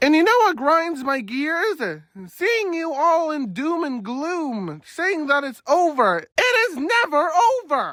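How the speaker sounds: shouting. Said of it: "Sorry that I just yelled".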